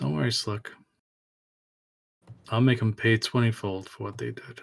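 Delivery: very low, hushed mutter under the breath. A character speaks to Slick, heard only by Ava, muttered extremely low. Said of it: "As he mutters extremely low".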